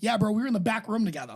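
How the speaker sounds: ordinary talk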